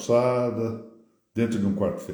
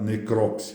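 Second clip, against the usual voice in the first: necrópsia stressed on crop, as proparoxytone. Recalling a legal-medicine professor's pronunciation: stress on crop in necrópsia. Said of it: "aprendi essa expressão como uma expressão proparoxítona".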